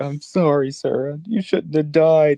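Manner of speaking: put-on high, cracking tearful voice breaking with emotion. Describing a heartfelt monologue in a show, imitating a breaking voice. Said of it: "his voice is breaking".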